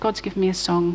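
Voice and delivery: ordinary talk, nothing marked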